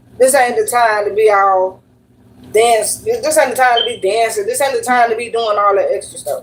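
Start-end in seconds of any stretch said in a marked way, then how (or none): none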